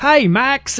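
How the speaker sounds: put-on very high-pitched voice with Australian accent. Imitating the Australian version of a sergeant character, high Australian accent. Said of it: "Australians have a very high, tingy kind of an accent, so they talk really high up here".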